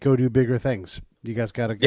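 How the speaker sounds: usual speaking voice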